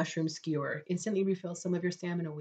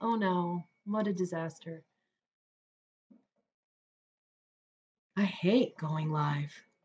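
very drawn-out, very slow, sarcastic fake despair. Talking about coming back live again tomorrow: sarcastic mock dismay. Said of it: "That was sarcasm".

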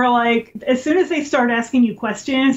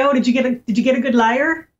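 put-on Irish brogue, much slower. Quoting a man's question, imitating his irish brogue. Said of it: "with his brogue".

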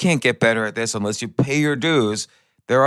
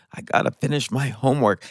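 mock tearful sobbing, crying through words. Retelling a late-night talk with a child at two in the morning: imitating someone crying. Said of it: "she's, like, crying".

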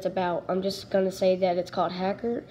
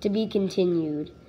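ordinary delivery, nothing marked

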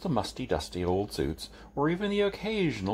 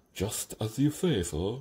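agreeable but full of doubt. Igor, answering the man he calls sir about the midwife, sounding doubtful. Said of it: "but doubt rode on his every word".

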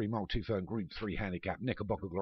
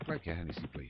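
put-on Irish accent; 2 semitones lower, 3 dB quieter than usual. Race commentator calling the start of the Hennessy Gold Cup, Irish accent. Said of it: "I don't know why I've given out an Irish accent".

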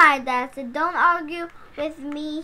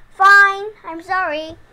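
said without meaning it; 4 semitones higher, 5 dB louder than usual. Freddy apologizes to his sister because his dad insists, an insincere apology. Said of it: "You didn't mean it".

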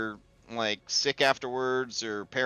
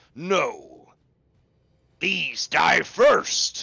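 roaring lion voice, louder; 3 semitones higher, 5 dB louder than usual. Narrating a game, the manticore's lion head roars at the scamp: roaring lion voice. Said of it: "the lion roars at it and says".

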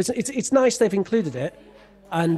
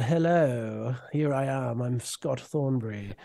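put-on posh British voice, lower and quieter; 6 semitones lower, 7 dB quieter than usual. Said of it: "he's kind of got that".

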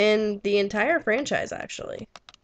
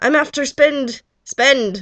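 loud, slow, terrible put-on pirate voice; 3 semitones higher, 7 dB louder than usual. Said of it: "That was bad".

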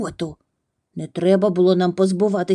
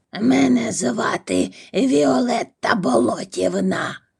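creaky, grating character voice; 3 semitones higher than usual. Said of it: "сказала жінка скрипучим голосом".

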